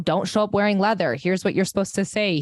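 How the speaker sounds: plain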